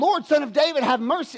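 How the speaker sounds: high, yelled, begging cry. Telling a Bible story, acting out a woman's plea to Jesus, retelling a woman's yell. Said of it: "She's she's yelling".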